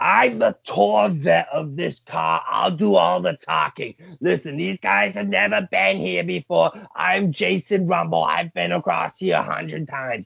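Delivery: excited, high, rough, nonstop screaming rant. Retelling someone leaning over the seat at the border officer: imitating someone screaming. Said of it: "he starts screaming at this guy".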